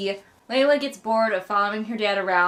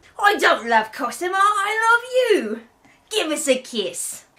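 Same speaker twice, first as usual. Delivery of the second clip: put-on British accent, pitched higher; 8 semitones higher, 3 dB louder than usual. Reading the book aloud, the speaker gives Tobias's line in a Tobias voice, British accent. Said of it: "Please make that Tobias's voice from now on".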